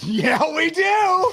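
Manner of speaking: excited, delighted, very high voice. Retelling how Lori answered when it was brought up: imitating Lori sounding happy. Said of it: "She was so happy that that was here".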